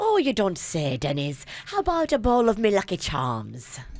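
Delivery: attempted Irish accent. Asked to let the group hear an irish accent, the speaker answers in an irish accent. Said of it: "let me hear your Irish accent".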